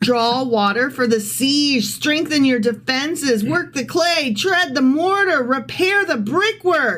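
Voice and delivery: high, sarcastic, mocking, barked delivery. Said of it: "It's sarcasm".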